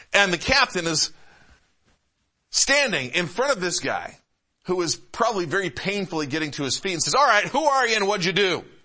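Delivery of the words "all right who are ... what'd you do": loud, high-pitched shout. Retelling a captain questioning a beaten man over a crowd: retelling a loud shout. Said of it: "he's having to say it very loudly".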